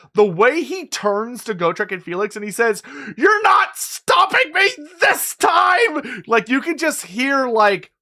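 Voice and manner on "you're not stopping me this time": frustrated, hateful, anxious, defiant, high voice. Praising the voice acting, quoting the character turning on Gotrek and Felix, imitating Thanquol's frustrated hate. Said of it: "anxiety and frustration and hate in that voice".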